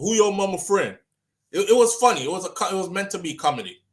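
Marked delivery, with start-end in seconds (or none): 0.0-1.0 comic dad voice with a grilling, quizzing tone. Retelling a comedy skit, acting out the dad's reply. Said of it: "would be like".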